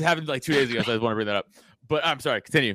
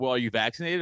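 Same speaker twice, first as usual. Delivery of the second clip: plain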